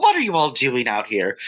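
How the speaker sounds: put-on British accent leaking through, thinly disguised. Retelling how Doctor Quinn interrupts the seance: Doctor Quinn's disguised British accent. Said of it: "I'm a British woman, but I'm trying to disguise my British accent".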